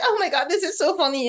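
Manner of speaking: put-on giggly fourteen-year-old girl voice. Retelling how a character acted in a movie scene: imitating a giggling fourteen-year-old girl. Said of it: "she's giggling all the time, like a fourteen-year-old girl".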